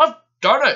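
booming, shrill, high-pitched, loud and proud. In a children's story, a character at the top of the hill speaks proudly. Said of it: "he said proudly".

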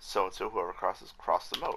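plain

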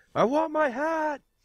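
very high, slow, drawn-out shout. Voicing a character who leans back and yells at Bran: yelling in character. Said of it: "just yells at Bran".

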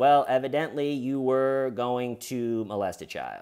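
normal talking voice

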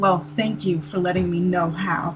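soft, hushed, close half-whisper. Acting out her reply to a boastful foe, in a half-whisper. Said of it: "Then she'll just whisper".

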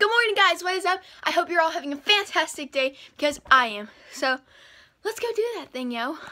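very loud, high-pitched and out of breath. Greeting viewers right after jumping a fence, out of breath. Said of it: "I don't even know why I'm out of breath".

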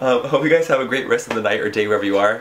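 loud, laughing, words breaking up with laughter. A video maker signs off to viewers after several failed attempts, laughing while speaking. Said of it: "I'm laughing because I just tried to say that 3 times".

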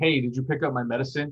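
ordinary delivery

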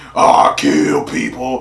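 very deep, low, put-on tough-guy voice. Speaker mocks what he thought this would be like, put-on deep voice.

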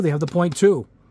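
ordinary talk

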